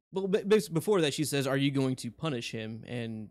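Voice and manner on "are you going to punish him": ordinary delivery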